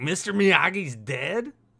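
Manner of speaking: put-on Boston accent, pitched high. Retelling a mother's surprised question on the phone: Boston accent. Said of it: "it's that Boston accent".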